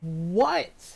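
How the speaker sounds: loud, annoyed, frustrated, exasperated, drawn-out what. Retelling a game scene, imitating annoyed Cullen. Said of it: "how annoyed and frustrated Cullen sound".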